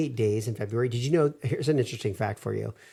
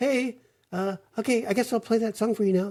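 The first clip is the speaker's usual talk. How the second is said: put-on very high, ditzy, airheaded teenager voice; 11 semitones higher than usual. Complaining about a voice assistant, the speaker mimics it; Alexa as ditzy teenager. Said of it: "like a ditzy uneducated teenager".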